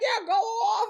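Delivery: high-pitched, excited cheering.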